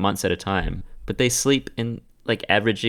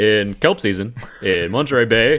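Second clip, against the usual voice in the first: put-on American accent, louder; 5 dB louder than usual. Trying an impression when asked to say a line: Barack Obama impression. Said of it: "You almost had me at "in kelp season,"".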